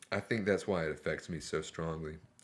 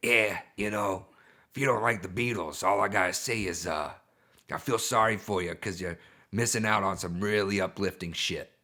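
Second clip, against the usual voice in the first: loud, curmudgeonly ranting; 6 dB louder than usual. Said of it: "Is that your [name] impression?".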